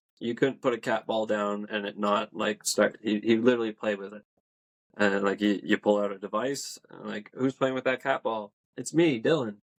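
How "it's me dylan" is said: put-on happy child voice, higher, slower. Describing a boy spirit who played with cat balls, imitating Dylan's happy kid voice. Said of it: "just a happy like kid voice".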